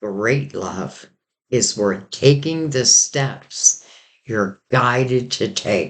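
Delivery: slow, deliberate, unhurried, weighted delivery. The speaker wants the listener to really hear it, speaking slowly. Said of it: "Why am I saying that so slowly?".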